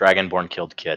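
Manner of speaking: dead-level, flat, no-reaction deadpan. A game narrator voices Grognar answering a player's demand, deadpan. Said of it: "at him deadpanned and just says".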